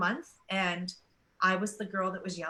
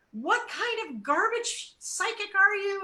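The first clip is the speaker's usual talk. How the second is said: mock, shrill, very high, furious shrieking screech; 12 semitones higher, 4 dB louder than usual. Retelling a client who started screaming at her: imitating someone screaming. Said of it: "she started screaming at me".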